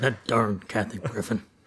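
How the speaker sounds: put-on cranky, crotchety, grumpy old man voice. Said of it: "It does fit the accent".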